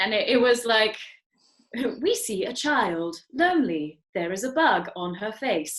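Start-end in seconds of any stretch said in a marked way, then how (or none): 2.0-5.8 completely flat reading with no emotion. Imitating a charity ad's audio description: imitating a flat news voice. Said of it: "the audio description was like a news voice".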